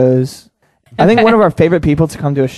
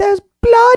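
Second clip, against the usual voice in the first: put-on funny, very high British child voice saying "blood". Speaker retelling a video of a British kid, imitating the kid's funny way of saying blood. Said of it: "pronounces blood really funny".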